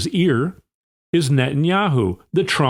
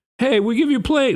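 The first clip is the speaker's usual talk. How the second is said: very high put-on Italian accent; 9 semitones higher than usual. Imitating Qatar offering a plane, in an accidental Italian accent. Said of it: "made it sound like he's Italian".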